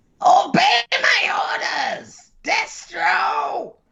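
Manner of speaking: very high, rough yell. Reacting to Cobra Commander being pissed, voicing his order; yelling as Cobra Commander. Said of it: "Could you not yell at me".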